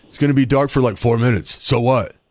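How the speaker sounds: gravelly, indifferent voice. Quoting a friend who does not care about the eclipse: imitating Chris's gravelly voice. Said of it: "this is a quote from Chris".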